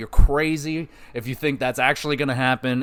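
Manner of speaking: normal talking voice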